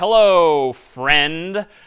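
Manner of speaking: put-on sarcastic tone. Showing an example line to print, in a put-on sarcastic tone. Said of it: "maybe I'm being a little sarcastic here".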